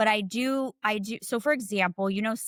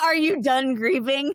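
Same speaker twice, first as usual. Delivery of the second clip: speech through bursts of laughter; 5 semitones higher, 6 dB louder than usual. Repeating a question people ask the grieving, laughing. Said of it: "I'm laughing".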